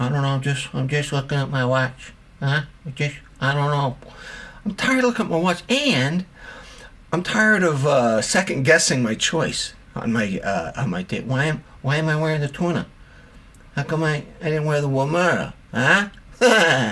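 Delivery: babyish, infantile cartoon character voice. Retelling his date asking why he keeps checking his watch: cartoon voice. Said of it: "where that cartoon voice come from?".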